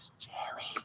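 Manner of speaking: hushed, very quiet, breathy, barely voiced whisper. Retelling how a spirit leaned over to say a name: imitating someone whispering. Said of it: "and whispering".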